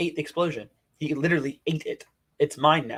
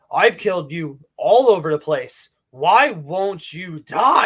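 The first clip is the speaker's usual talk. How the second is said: put-on villain voice, loud, slow, angry, exasperated; 3 semitones higher, 9 dB louder than usual. Retelling a story where the villain gets aggravated, mock-angry villain. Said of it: "He gets angry".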